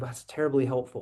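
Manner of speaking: mock sarcastic, dry, faux-appreciative tone. Retelling own reaction to an article: imitating own sarcastic remark.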